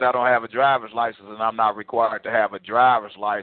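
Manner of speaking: ordinary talk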